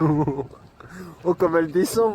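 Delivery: talking through giggles, laughing through the words. Watching an avalanche come down while filming, laughing while talking. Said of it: "Why are you laughing?".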